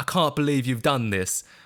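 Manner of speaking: put-on British accent. Repeating his sound bite that chat praises, in an imitated british accent. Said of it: "Can you say something in a British accent?".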